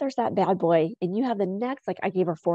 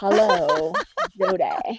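put-on, swooping radio announcer voice. Voiceover artist greeting someone, switching into a radio announcer voice. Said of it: "I'm going to start doing a radio voice".

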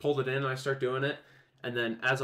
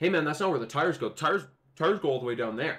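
sarcastic, snide, sneering know-it-all tone; 3 semitones higher, 4 dB louder than usual. Retelling what a coworker said about where the tires go: imitating a sarcastic coworker. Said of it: "just sarcastic, being an ass".

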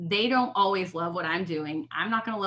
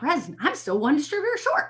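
acted frantic, high, swooping panicked shout; 8 semitones higher than usual. Retelling a call to an upline about being one distributor short: imitating own past shouting. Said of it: "shouting out".

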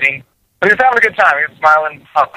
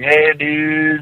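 put-on stock surfer dude accent; 3 dB quieter than usual. Describing how non-Americans fake an American accent, in a surfer dude voice. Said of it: "the surfer dude boys".

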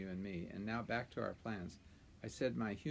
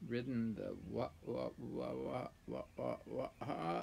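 words turned into a rough, neighing horse whinny. Narrating the horse retorting to the donkey, in a neighing horse voice. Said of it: "it came out as a sort of nay".

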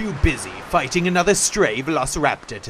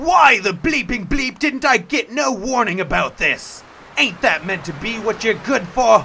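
high pirate captain voice, yelling curses; 6 semitones higher than usual. A captain jumping into a fight yells at the bird on his shoulder: yelling. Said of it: "he yelled".

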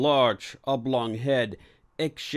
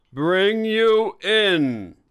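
dramatic, raised voice, pitched up; 8 semitones higher, 6 dB louder than usual. He finishes his sentence to the one resisting, with a raised, dramatic voice. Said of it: "He raised his voice dramatically".

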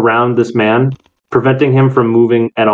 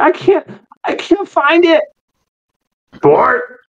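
put-on preteen boy's breaking voice, much higher. Describing a gruntled preteen, changing voice of 12-year-old boy. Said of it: "the changing voice of a 12-year-old boy".

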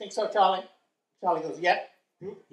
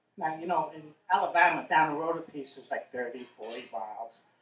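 normal talking voice

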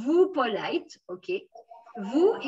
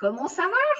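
rising pitch on va; 6 semitones higher than usual. Asking a question in French, rising pitch on va. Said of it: "when you ask a question, you up, raise your voice up".

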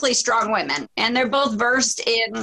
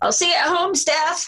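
pitched-up, loud yelled call; 6 semitones higher than usual. Retelling an in-ring segment where Triple H calls after Steph: imitating Triple H yelling.

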